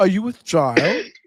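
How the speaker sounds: teasing put-on Boston accent in little boy voice.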